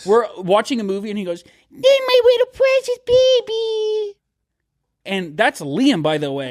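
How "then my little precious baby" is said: very high, slow, drawn-out lovey-dovey voice. Mocking the voice a friend uses with his partner during movies: imitating Liam's couple voice. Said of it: "the voice you and your gal do with each other".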